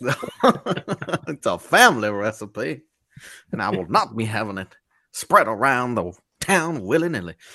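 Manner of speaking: put-on Southern accent. Co-hosts riffing on a southern character; speak in a southern accent. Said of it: "If I need a southern lawyer".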